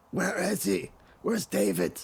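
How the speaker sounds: very high, dry, rasping all-out yell. A strange man shouting at a neighbor, dry raspy yelling. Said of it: "yelling as loudly as he can in that dry, raspy voice".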